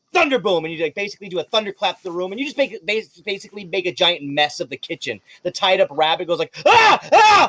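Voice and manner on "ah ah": shrill, ear-splitting, very high, very loud screams. Voicing a tied-up rabbit as chocolate blows everywhere: screaming rabbit. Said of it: "as he basically screams".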